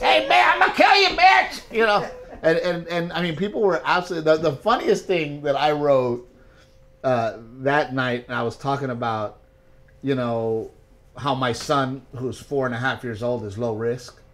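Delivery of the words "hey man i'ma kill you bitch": shrill, loud, high, menacing screeching rant. Retelling a stand-up bit, doing a Joe Exotic impersonation. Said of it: "Joe Exotic impersonation".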